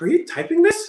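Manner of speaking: jittery, nervous, very high-pitched. Retelling a phone call, imitating the other person getting all nervous. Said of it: "he gets all nervous".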